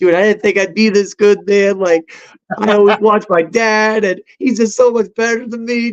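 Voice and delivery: high, bawling sob, crying through every word. Retelling his reply to his father-in-law after a set, imitating own bawling. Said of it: "I literally was on the bawling on the ground".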